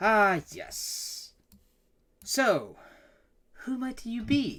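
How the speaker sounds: drawn-out patronising voice. A voice actor performs a character's line, slow and condescending. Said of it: "It's that pace as you hear that, and you hear him go".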